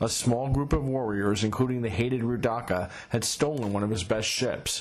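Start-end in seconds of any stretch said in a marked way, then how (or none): none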